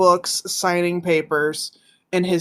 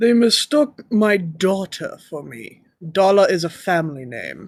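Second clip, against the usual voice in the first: put-on orc character voice. Voicing an orc who answers the adventurers: Tim Curry voice. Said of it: "I love your Tim Curry".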